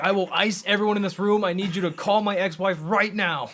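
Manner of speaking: loud, high-pitched, barking, menacing voice. Retelling a comedian's bit, imitating Shane Topp as a robber. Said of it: "He's like".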